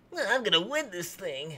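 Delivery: put-on high, soft kid voice with cool bravado. Mocking a contestant's line, like a kid trying to sound cool. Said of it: "He sounds like a kid trying to be cool".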